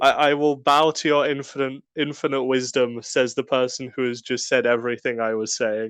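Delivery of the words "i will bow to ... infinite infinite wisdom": usual speaking voice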